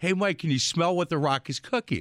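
ordinary delivery

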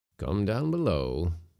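ordinary delivery

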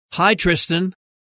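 ordinary talk

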